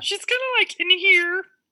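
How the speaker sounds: very high, loud puppet voice. Demonstrating Muppet voices after being asked how Miss Piggy sounds, use the Miss Piggy voice. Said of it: "those were my Muppet voices".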